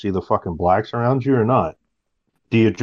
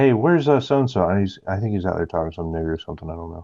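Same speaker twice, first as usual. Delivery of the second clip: flat-toned, casual deadpan delivery. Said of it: "Deadpan it and say".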